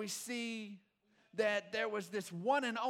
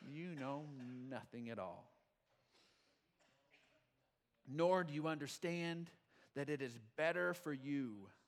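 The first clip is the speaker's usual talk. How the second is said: very low, quiet, smug, condescending voice; 7 semitones lower, 6 dB quieter than usual. Reading the high priest's words from scripture and acting them out: mock-smug Caiaphas voice. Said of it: "I just hear him saying a nice smug voice".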